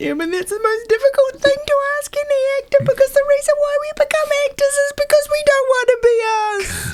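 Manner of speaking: mock highly emotional, very high-pitched outpouring. Retelling own reply to a director's note: retelling own emotional words. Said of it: "I then got highly emotional".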